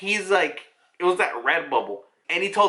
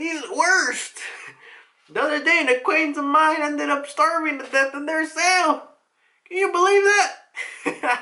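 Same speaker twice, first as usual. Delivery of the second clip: put-on very high, botched, bad old-person voice; 11 semitones higher than usual. Retelling what an older character complains about: attempted old person voice. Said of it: "I can't do an old person".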